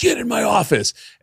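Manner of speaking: mock angry, furious, pitched very high. Recounting the comedy club owner ordering them into his office: retelling a furious owner. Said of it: "the owner of the Comics Lounge was furious".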